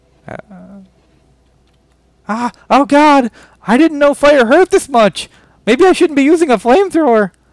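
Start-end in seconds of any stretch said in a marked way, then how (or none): 2.7-7.2 put-on generic girl voice. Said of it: "that was just [name]'s generic girl voice".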